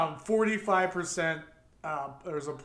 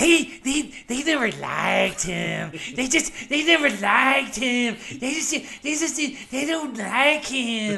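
loud, slow, pitched-up put-on mocking voice; 7 semitones higher, 7 dB louder than usual. Doing a promised impression of the Republicans on the Democrats: impression of the Republicans. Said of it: "my impression of the Republicans".

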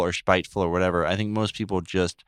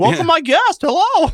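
very high, very loud, shrill, booming put-on celebrity voice; 8 dB louder than usual. Bantering about a previous impression, Pennsylvania Christopher Walken impression. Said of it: "a Pennsylvania Christopher Walken".

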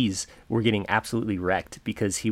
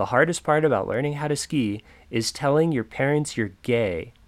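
loud, pitched-up, projected voice; 5 semitones higher, 3 dB louder than usual. Retelling how the snowboard instructor addressed the class: imitating an instructor speaking loudly. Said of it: "loud enough so that the whole ski group".

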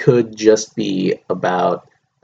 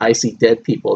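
ordinary talk, nothing marked

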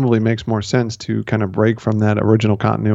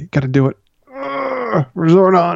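strained, beaten-down voice, much higher; 9 semitones higher than usual. Showing how a line should be delivered: strained, barely able to stand. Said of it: "you gotta say it like you just got shit stomped and like you can barely stand up".

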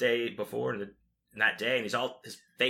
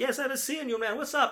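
put-on Italian accent, pitched very high; 14 semitones higher than usual. Retelling a greeting from a band member: imitating an italian accent. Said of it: "he's got this Italian accent".

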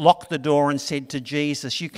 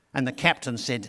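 ordinary talk, nothing marked

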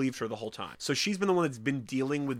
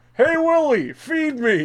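put-on character voice, very high, very loud, shrill, drawn-out; 13 semitones higher, 12 dB louder than usual. Doing one of the few impressions they can: put-on character impression. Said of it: "It's like one of the few impressions I can do".

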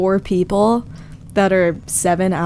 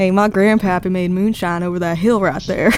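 put-on Appalachian mountain accent. Imitating his bassist at a Pennsylvania gas stop: put-on Appalachian accent. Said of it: "This is like kind of my impression of him".

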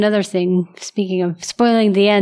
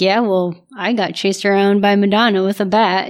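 ordinary talk, nothing marked

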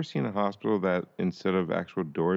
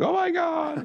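play-acted, very high-pitched screaming exclamation. Recapping an episode, speaker imitates a woman screaming on meeting someone who looks like her. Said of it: "starts screaming, like".

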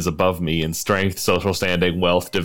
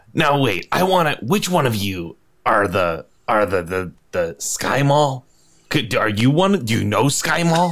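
put-on grumpy character voice; 5 semitones higher than usual. Imagining Trunks asking the group about Skymall, grumpy Trunks voice. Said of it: "[name] is so grumpy. / [name] like narrows his eyes and is just like, / [name] is so grumpy".

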